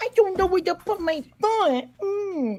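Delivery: put-on very high-pitched little-girl baby-talk voice. Complaining about how Mary talks, imitating Mary's baby talk. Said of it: "talking like a baby or a little girl".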